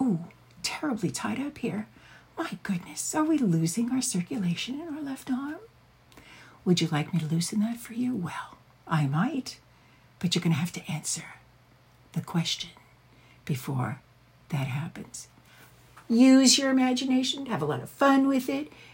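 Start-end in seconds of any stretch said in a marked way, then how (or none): 0.0-15.3 seductive interrogator voice, quieter. Showing how to check on a restrained partner during an interrogation scene: erotic interrogator voice. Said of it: "you can do it very, very erotically in an interrogation scene".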